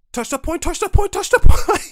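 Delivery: heated, angry yelling, very high and very loud. Retelling a losing game where another player went off: imitating an angry gamer yelling. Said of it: "I can try to mirror his voice".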